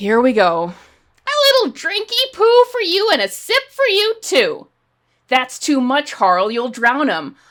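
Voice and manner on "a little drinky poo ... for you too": grating, obnoxious, very high swooping voice. Acting out a scene from the show, the speaker voices Harley Quinn, obnoxious Harley Quinn voice. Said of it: "she is going to talk in the most obnoxious voice possible".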